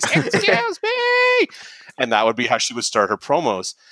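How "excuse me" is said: mock very high, piercing, shrill scream. Describing a performer's on-stage catchphrase bit: retelling a shrill scream. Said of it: "scream in the shrillest possible voice".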